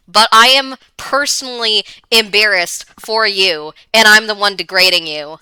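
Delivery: ordinary talk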